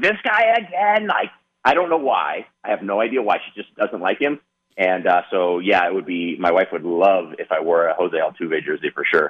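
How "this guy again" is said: put-on very high, shrill, fed-up shriek. A husband imitates his wife screaming at the television, imitating wife screaming. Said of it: "she's like screaming at the television".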